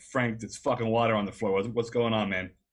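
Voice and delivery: loud, urgent yell. Recounting the seatbelt flinging loose, retelling a yell. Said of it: "I yell something painfully obvious".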